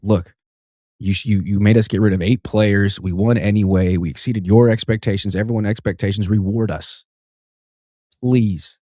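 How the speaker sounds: normal talking voice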